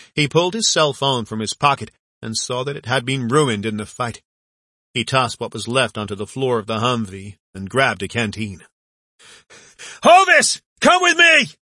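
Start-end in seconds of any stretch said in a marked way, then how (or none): 10.1-11.5 loud, very high, drawn-out hollered yell. Leaning out of the car door, a man calls another to come with him: yelling. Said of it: "He yelled".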